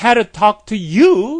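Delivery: "you" stressed, slow and loud.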